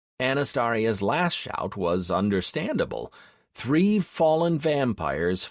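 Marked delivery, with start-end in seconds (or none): none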